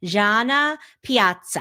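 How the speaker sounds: put-on, best-effort Italian accent and pronunciation. Podcast host introducing a guest's name, in best Italian voice. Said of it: "I try to say that in my best Italian voice".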